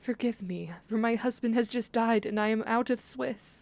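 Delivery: tearful, sniffling, crying through the words. Narrator voicing a barmaid answering the shop owner, tearful and sniffling. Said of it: "the beautiful but tired [name] huffing and puffing up the winding path as she approaches a certain doom, / the beautiful but tired [name] huffing and puffing up the winding path as she approaches a ce".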